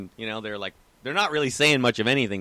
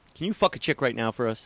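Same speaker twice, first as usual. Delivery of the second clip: mock-deadpan delivery. Speaker retelling what a guy at a warehouse door asked him, deadpan retelling. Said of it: "he just looks at me deadpan and says".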